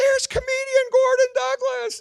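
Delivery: very high, loud yell. At a funeral, a woman getting out of a car spots the comedian: imitating a woman yelling. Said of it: "this lady gets out of a car and yells".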